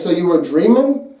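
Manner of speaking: ordinary delivery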